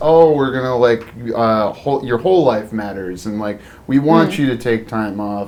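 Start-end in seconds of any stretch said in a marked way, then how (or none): none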